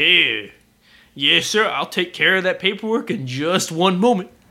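put-on Cajun accent. Showing the others how someone should talk, in a Cajun accent. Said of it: "my Cajun accent".

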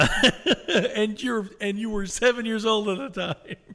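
high voice, laughing through the words.

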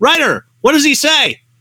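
very high-pitched, loud yell. A writer recounts the director turning around and calling to him, imitating a yell. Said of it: "he turns around and yells".

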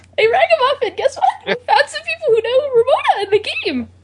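whiny high character voice. Player voicing the two characters who go through the door first, high-pitched and whiny. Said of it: "in their high-pitched, whiny voices".

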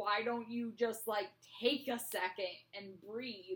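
ordinary talk, nothing marked

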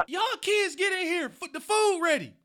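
high, loud, mock carrying holler. Remembering mom opening the door, the speaker imitates mom's loud call. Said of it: "you can hear my mama voice from 3 blocks away".

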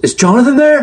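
very high-pitched hollering, calling yell. Retelling how a buddy yelled a question through the door; retelling a friend's yell. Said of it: "And my buddy yells".

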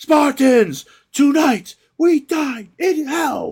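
screaming, very high and slow. Asked by another speaker to deliver a requested line, screaming the line. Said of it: "You don't have to scream it".

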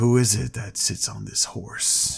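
roughened, creaky put-on voice. Showing the voice used for Thorgeir, who asks about a rider, Clint Eastwood voice. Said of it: "It was my Clint Eastwood blend".

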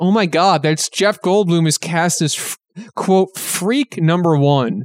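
ordinary delivery

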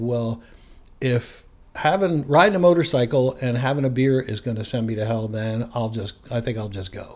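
ordinary delivery

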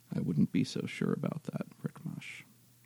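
soft, quiet, breathy near-whisper. Voicing a character speaking close to another character: quiet voice. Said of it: "she just quietly".

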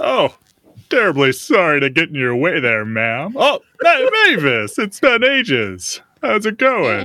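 swooping, animated, wide sing-song starfish voice. Voicing the starfish character greeting another character: Patrick Warburton voice. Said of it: "Your voice for your starfish sounds like Patrick Warburton".

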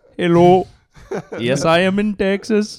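very loud, slow robot voice with Indian accent. Joking about an outsourced customer service robot: imitating an indian robot. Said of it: "Give me an Indian robot".

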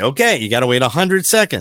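normal talking voice

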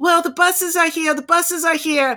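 put-on New York accent, pitched high. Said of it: "he had a New York accent too".

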